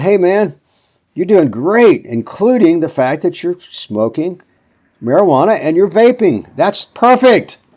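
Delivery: very sarcastic, high and slow.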